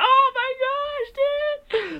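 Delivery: very high, very slow, drawn-out hyped cry. Retelling a favorite movie scene, imitating a hyped exclamation. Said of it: "one reason why I got so hyped".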